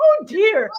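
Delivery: shrill, very high-pitched, loud little exclamation. Quoting how she replied, high-pitched voice. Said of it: "I swear it was a high pitched voice like that in that kind of tone".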